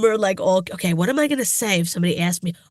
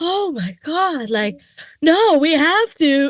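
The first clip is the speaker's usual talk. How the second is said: put-on very slow, high, drawn-out over-the-top drama; 7 semitones higher than usual. Retelling a scene where a character acts fake: imitating fake over-the-top acting.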